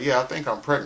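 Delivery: ordinary talk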